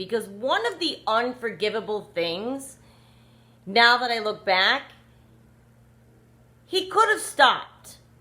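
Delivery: heated rant, anger rising and building. Ranting about the narcissist, looking back on what he did: getting angry. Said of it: "Because I started to get angry".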